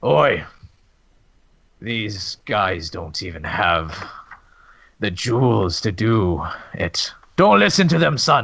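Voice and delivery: grizzled, very deep voice. Voicing the one above you in the scene, in a more grizzled voice. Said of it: "with sort of like a more grizzled voice".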